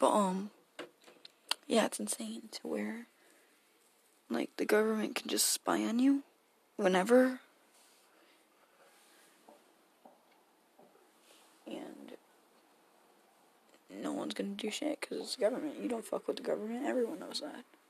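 hushed. Talking on with a friend sleeping right behind them, keeping voice down. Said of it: "I gotta keep my voice down".

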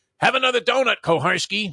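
acted-out, shrill, very high, loud jeering yell. Retelling how a coach screamed at a referee: imitating a scream.

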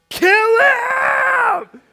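very loud, very high shriek, "him" drawn out. Retelling a woman standing up and yelling out, retelling a top-of-lungs scream. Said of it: "at the top of her lungs, like there's veins in her neck".

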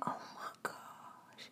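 soft, slow stunned whisper.

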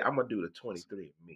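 acted, posh, fancy, classy-sounding voice. Imitating another speaker bragging about being classy: imitating someone acting fancy. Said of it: "she fancy".

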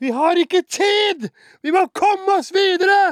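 very high, very loud, furious lost-it shout. Retelling a film producer standing up and losing it: retelling a producer's shout. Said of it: "bare ropte sånn der".

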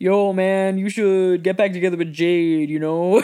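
put-on generic boy voice. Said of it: "that's just my generic boy voice".

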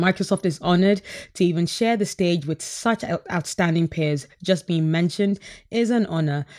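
ordinary delivery

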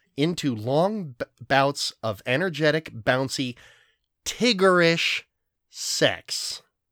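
careful clear articulation. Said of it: "I'm gonna enunciate this word very carefully".

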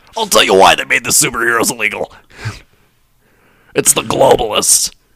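loud, forceful declaring voice. Joking about superheroes being made illegal: Alex Jones impression. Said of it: "it's a great Alex Jones impression".

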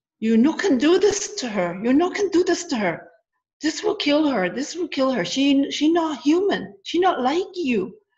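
put-on heavy foreign accent, broken English. Retelling a woman speaking through her after switching to english: imitating a really thick accent. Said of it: "she has a really thick accent".

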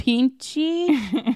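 clumsy put-on Mexican accent. Speaker quoting a guy's question in a story: bad put-on accent. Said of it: "I can't even do the bad accent".

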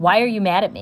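plain

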